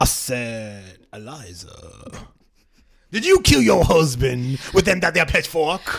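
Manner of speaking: put-on elderly Southern gentleman. On a show full of voices, one host slips into the voice: old Southern gentleman voice. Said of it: "only voice I'm gonna ask you to read".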